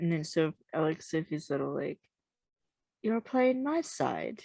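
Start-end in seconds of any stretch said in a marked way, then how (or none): 3.0-4.4 very high, cute, bad British accent. Speaker recounts what Sophie said; imitating Sophie, bad British accent. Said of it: "It's a cute bad British accent from me".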